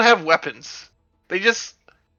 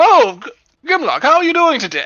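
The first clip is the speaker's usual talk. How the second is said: snooty put-on uppity voice, much higher and louder; 9 semitones higher, 3 dB louder than usual. Speaker greeting grimlock in character: uppity voice. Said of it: "I need to use the uppity voice".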